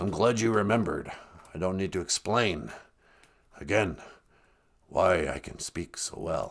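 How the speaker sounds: put-on elderly-sounding voice. Playing a baby with Benjamin Button disease: old voice. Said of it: "he's got old voice".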